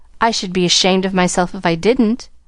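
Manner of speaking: ordinary delivery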